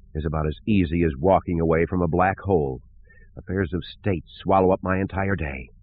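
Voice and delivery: plain reading voice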